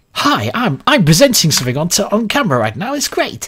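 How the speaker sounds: fake upbeat presenter voice. Contrasting their real voice with the on-camera mask, put-on presenter voice. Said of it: "rather than".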